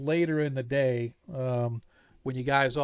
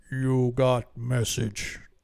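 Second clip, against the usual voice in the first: deep baritone giant voice. Narrating the tavern scene, voice the hill giant owner Gruanab in a deep baritone. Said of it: "in this deep baritone voice".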